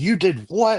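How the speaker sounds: put-on very high, shrieking scream. Retelling a phone call where mom reacted: imitating mom screaming. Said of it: "screaming at me".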